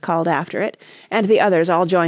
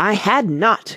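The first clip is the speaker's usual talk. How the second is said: very angry, sharp, snapping, furious cry. Narrator reads the Mouse snapping back at Alice, sharply and very angrily. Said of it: "cried the Mouse, sharply and very angrily".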